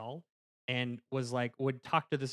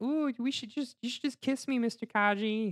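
very high kiddish flirty voice; 10 semitones higher, 3 dB louder than usual. Retelling a flashback scene, imitating a kiddish flirty voice. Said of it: "being all, like, kiddish".

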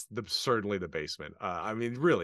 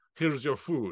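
ham-fisted put-on Russian accent, higher pitch; 4 semitones higher than usual. Imitating Esmeralda's line from the movie: ham-fisted Russian accent. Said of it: "this total, like, Russian accent".

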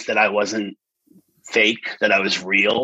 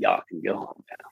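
soft, smug, gloating whisper. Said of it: "looked at all the contestants, like".

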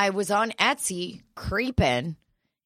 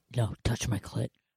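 very deep put-on voice, hushed and soft; 7 semitones lower, 7 dB quieter than usual. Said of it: "Who is that deep voice talking?".

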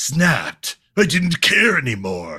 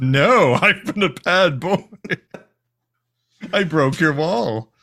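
voice of a lion god; 2 semitones higher than usual. Speaker voices the naughty lion, in a Lion God voice. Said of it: "Lion God voice like".

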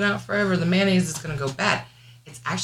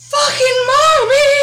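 put-on very high, loud, sobbing child-like crying scream; 11 dB louder than usual. Retelling a son crying at night: imitating a child crying. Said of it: "he's crying".

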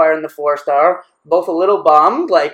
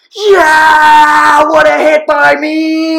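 very high, very slow, stretched, loud acted holler; 10 semitones higher, 6 dB louder than usual. Recounting a player yelling through the net after a hit, retelling a yell. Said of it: "he's yelling through the net".

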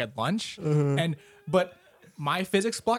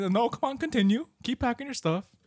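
nasty, mean, mocking sarcasm, pitched up; 8 semitones higher than usual. Retelling what a teacher said to a kid in class, mock mean sarcasm. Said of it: "really like mean sarcastic".

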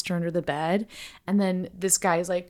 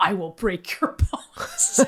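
put-on slow, drawn-out, menacing little-kid voice. Describing a book's orphan who is Satan's son: imitating a menacing six-year-old. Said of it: "little six-year-old who's like".

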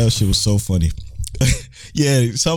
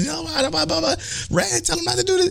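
mock yelling, much higher pitch; 5 dB quieter than usual. Speaker recounts a man screaming as bullets fly, retelling a yell. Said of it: "because he's like yelling".

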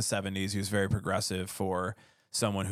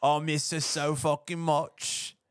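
put-on British accent, higher pitch; 7 semitones higher than usual. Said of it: "Sorry for my British accent".

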